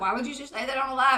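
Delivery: normal talking voice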